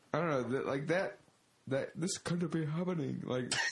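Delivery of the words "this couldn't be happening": really poor, bad, put-on Japanese accent. Quoting a character's line: imitating a bad Japanese accent. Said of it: "sounds just like a really bad Japanese accent".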